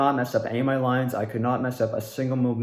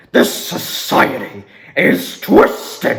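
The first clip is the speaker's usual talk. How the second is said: very loud, aggressive, unhinged god voice; 5 semitones higher, 8 dB louder than usual. A voice actor demonstrates the trigger line for playing a god, intense aggressive god voice. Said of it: "my trigger line to get into that voice is like".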